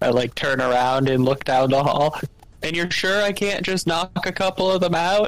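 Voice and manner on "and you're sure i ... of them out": full-throated, high-pitched yell. Asking down the hall whether to knock some out: shouting. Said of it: "I shout".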